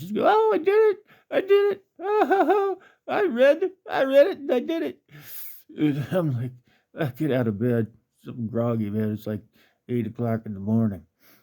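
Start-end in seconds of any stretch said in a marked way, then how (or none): 0.3-5.0 very high, loud, giggly chatter with long "oh". Retelling hearing her call out from the yard: imitating giggling talk. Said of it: "I hear her giggling out in the yard".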